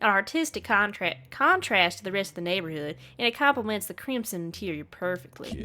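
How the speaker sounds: put-on rural country-folk accent. Praising a house choice to a neighbor, in a country accent. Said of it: "I gave him a country accent".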